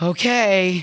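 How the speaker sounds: doubtful, defeated, drawn-out sigh on "okay". A mother retells slumping over the steering wheel, giving in to her son: retelling a defeated sigh. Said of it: "almost in a defeated sigh".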